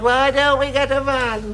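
high, awful, dreadful ghostly moan. Describing a figure who appears at every shop delivery, the speaker does put-on moaning in an awful voice. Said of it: "Moaning in an awful voice".

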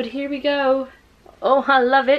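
poor put-on British accent. Alone in a room, the speaker poorly imitates British booktubers with a bad British accent. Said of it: "Why am I talking like this?".

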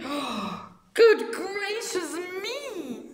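exclaimed very slowly, way up high. Reading a story aloud, the narrator gives the mother's line, exclaiming.

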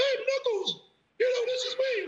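squeaky, very high little voice. Showing a voice tried out for the role: squeaky voice. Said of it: "I tried a squeaky voice".

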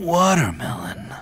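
half-hearted, put-on seductive sexy voice. Calling out a fruit name after being asked for it: sexy voice. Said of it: "that was your sexy voice?".

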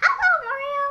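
very high, open-mouthed princess voice. Showing how to talk like Peach: Peach voice. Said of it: "That's how you do Peach".

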